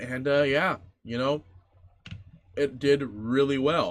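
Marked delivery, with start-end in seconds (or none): 2.6-3.9 somewhat sarcastic, dry, ironic delivery. Recalling how a mid Broodmother did in an earlier series: sarcastic. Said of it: "I'm being somewhat sarcastic".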